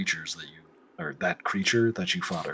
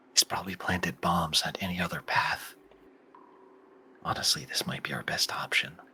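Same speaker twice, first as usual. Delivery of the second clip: hushed, breathy, barely voiced whisper; 5 dB quieter than usual. Voicing a character among the group of players: whispering. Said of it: "You hear Wayland whisper and go".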